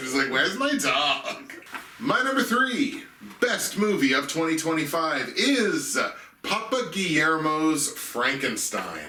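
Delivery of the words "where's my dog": put-on Valley Girl accent. Praising a movie scene, quoting Supergirl in her Valley Girl voice. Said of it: "this perfect Valley Girl voice".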